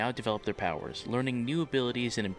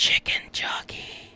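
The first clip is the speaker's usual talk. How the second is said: put-on whisper. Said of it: "went right up against my ear and whispered".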